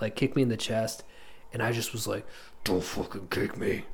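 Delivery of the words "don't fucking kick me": put-on demonic, possessed-sounding voice. Retelling telling off a boy who kicked them in the chest, demon voice. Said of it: "I used like a demon voice".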